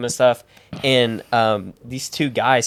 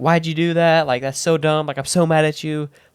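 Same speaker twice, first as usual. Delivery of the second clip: put-on upset mom voice, angry, tearful, crying scolding; 4 semitones higher than usual. Retelling a phone call from the speaker's mom, imitating her screaming. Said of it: "she's like screaming".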